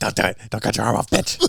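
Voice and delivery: creaky, fast, rough, taunting demon voice. Recalling an Evil Dead scene, the speaker imitates the possessed voice: Evil Dead demon voice. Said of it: "the one thing that all Evil Dead movies do is that voice".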